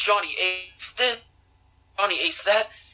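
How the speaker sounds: play-acted, angry, nonstop ranting. Retelling an interview where Justin Credible complains while driving: imitating Justin Credible ranting. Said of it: "he just was going off".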